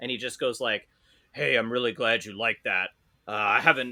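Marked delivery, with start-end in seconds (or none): 1.3-3.9 put-on dead serious voice. Retelling what the tour guide said off mic: imitating someone dead serious. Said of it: "And he's dead serious".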